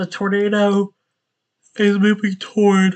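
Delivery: speaking through a yawn. Tracking a tornado's path live, the speaker talks while yawning. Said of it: "I'm so sorry for yawning".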